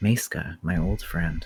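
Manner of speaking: low, soft, hushed half-whisper. Narrating a game scene, voicing Alexian as the player leans in: Alexian half-whispering.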